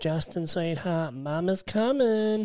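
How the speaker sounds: high put-on American accent, sudden. Retelling a woman leaving the supermarket calling to Justin, use put-on American accent. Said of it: "I don't know where the American accent came from".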